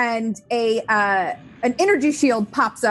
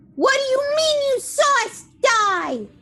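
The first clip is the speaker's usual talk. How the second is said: piercing, shrill shout, very high-pitched. Voicing a character who demands an answer before shooting: yelling in character. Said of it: "as she yells".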